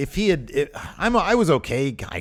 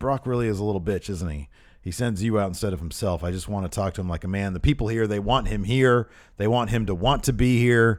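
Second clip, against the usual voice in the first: ordinary talk, nothing marked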